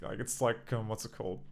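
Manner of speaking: usual speaking voice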